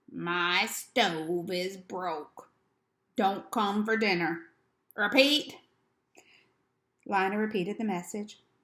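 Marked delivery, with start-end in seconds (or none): 0.2-5.6 slow, deliberate, hoarse, rasping voice. Reading a story, a man gives Lina a message in Natty Prime's slow hoarse voice. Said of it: "in a slow, hoarse voice".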